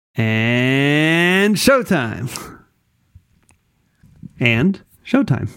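"and" stretched long and drawn out. Asked to draw out the and, saying the show's intro cue with a drawn-out and. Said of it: "draw out the and".

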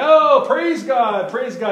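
constant, very loud, high yelling. Retelling how a drywall worker at church praised while working: imitating someone yelling. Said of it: "constantly in there yelling these things like".

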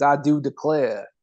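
put-on old Southern men's accent. Showing how old Southern men talk: imitating old Southern men's accent. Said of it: "that's how those Southern, like, old dudes talk".

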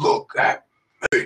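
low, deep, haunting, menacing voice. Speaker retells a man in a videotape ordering a tied-up cop, in a put-on deep voice. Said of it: "he has like that deep voice".

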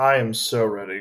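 detached, distant, unexcited tone. Answering the show host asking if they're ready, sounding distant. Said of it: "That sounded so distant".

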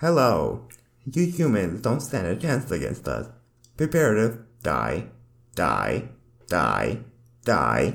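mechanical robot voice. Taking a turn at a robot voice after another person's attempt; robot voice. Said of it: "You want to do a robot voice real quick?".

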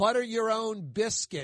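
ordinary talk, nothing marked

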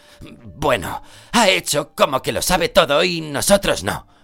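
growled voice. A character retorts after being reproached, growled. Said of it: "dijo Ron con un gruñido".

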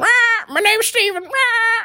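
very high, squawky parrot voice. Voicing a pirate's parrot giving its name: squawking parrot voice. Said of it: "Parrot, what's your name?".

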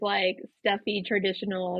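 plain

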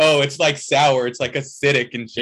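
usual speaking voice

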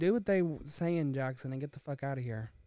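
ordinary delivery

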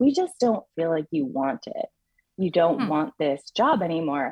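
ordinary talk

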